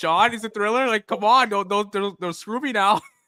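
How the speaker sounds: put-on worried tone. Teasing a fellow player about guessing the album thriller, mock-worried. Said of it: "You're like".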